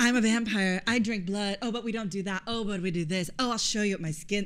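mocking put-on goth kid voice. Mocking a vampire who acts like a weird goth kid: imitating Edward as weird goth kid. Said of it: "And he's just like".

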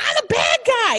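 very high-pitched, screamed outburst. Recounting a guessing game, speaker is retelling a scream from her. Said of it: "But she kept screaming".

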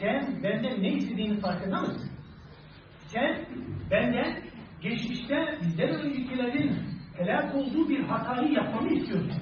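usual speaking voice

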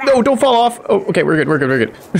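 high, rapid-fire, rushed yelling. A streamer playing a game reacts as their character nearly falls off, yelling. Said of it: "Sorry for the yelling".

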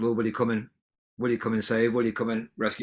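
ordinary talk

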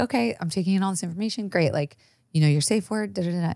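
steady, composed tone. Retelling what a dominatrix said in an interview: imitating a calm, never-raised voice. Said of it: "She never raised her voice above this".

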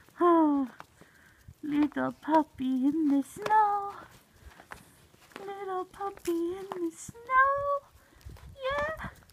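high, weird puppy-talk voice. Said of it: "My weird voice".

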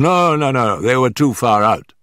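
ordinary delivery

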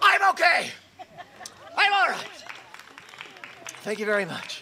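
out of breath, panting, very high voice. Thanking the audience right after his performance, out of breath. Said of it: "I can't breathe".

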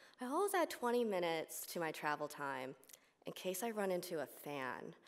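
ordinary talk

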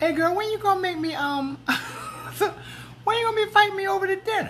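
voice pushed way up. Speaker retelling asking someone to cook them dinner: higher voice of past self. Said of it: "my voice was higher".

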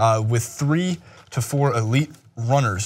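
ordinary delivery

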